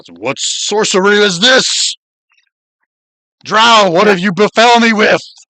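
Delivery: furious, loud, high, bellowing troll shout. Voicing a troll whose gem goes dull: troll shouting. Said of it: "And he shouts".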